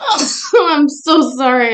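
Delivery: laughing hard while talking. Apologizing while reacting to something funny: laughing hard while talking. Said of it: "I'm laughing so hard".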